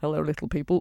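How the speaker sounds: muttering under breath. Retelling how bus passengers greet the fairies: imitating murmuring under breath. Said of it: "murmuring under their breath".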